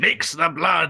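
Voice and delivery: mighty, grand voice with commanding intonation. Retelling a voice heard after stepping into the water: deafening voice. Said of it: "deafening voice comes in".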